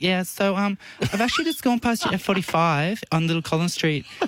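high put-on girl's voice. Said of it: "I actually put a girl's voice on".

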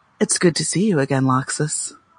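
whisper. A character hugs a player's character and speaks into their ear, whispering. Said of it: "she whispers into your ear".

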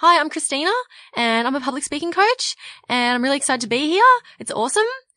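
uptalk, every phrase end lifted like a question. Showing a self-introduction said with uptalk: rising question intonation. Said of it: "people do this even when they're talking about themselves".

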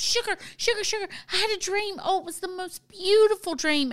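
excited, eager gushing. Retelling a grandchild describing her dream: imitating Sarah's excited voice. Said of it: "she was so excited. She goes".

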